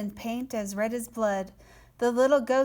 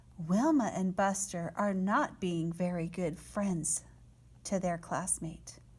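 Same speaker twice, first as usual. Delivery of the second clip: usual speaking voice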